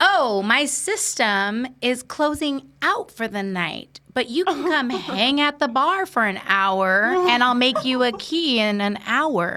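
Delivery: very slow, drawn-out mock gentleman voice. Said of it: "The gentleman that helped me said".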